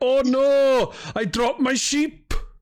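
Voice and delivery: put-on very high, slow, strong valleys Welsh accent. Inventing a character named Dai from the valleys: Dai's strong Welsh accent. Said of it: "I was trying to do a, a stronger Welsh accent".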